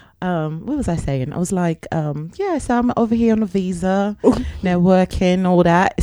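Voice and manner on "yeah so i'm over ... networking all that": awful put-on South London accent. Showing how she talked to a man in a fake accent: put-on british accent. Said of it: "Show us".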